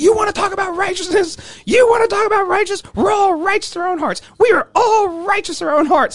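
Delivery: very high, shrill, loud, raging angry yelling. Retelling how an arresting cop yelled at him in a cell: imitating a cop yelling. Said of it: "He's yelling at me".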